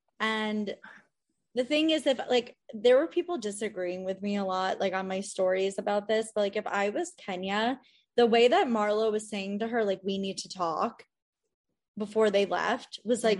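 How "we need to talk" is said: put-on aggressive demanding tone, lower and quieter. Retelling how Marlo told Kenya they need to talk: imitating Marlo's aggressive tone. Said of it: "really aggressive".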